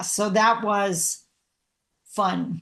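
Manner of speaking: slow, dry, sarcastic delivery. Recalling an awkward first meeting with new colleagues: sarcastic. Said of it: "I'm being sarcastic".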